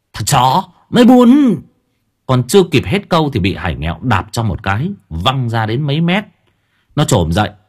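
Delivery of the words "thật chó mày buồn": very high-pitched, shrill, loud hiss. A young man, his wrist grabbed from behind, whips around and hisses. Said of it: "rít lên".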